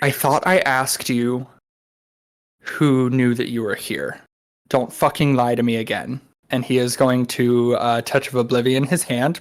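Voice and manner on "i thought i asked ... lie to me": menacing whisper, in character. Whispering into a captive's ear in character: whispering a threat in character. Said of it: "I'm going to whisper in his ear".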